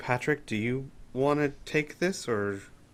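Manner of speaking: murmured, very quiet and low-key. In a role-play scene at a closed door, a character turns to a companion: very quiet. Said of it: "Al would very quietly say".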